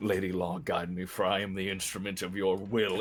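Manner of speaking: continuous running mutter to himself. Voicing a character running at a foe: muttering under his breath. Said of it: "muttering under his breath".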